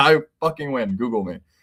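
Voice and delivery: pouty, sulky, put-out tone. Retelling an exhausted coach at a press conference: imitating someone pouting. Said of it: "pouting, basically".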